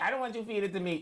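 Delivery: ordinary talk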